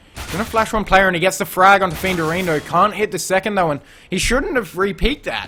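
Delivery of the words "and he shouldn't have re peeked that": voice cracking and breaking up mid-line. A caster calling a play during a stream, voice cracking. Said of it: "A bit of a voice crack from me".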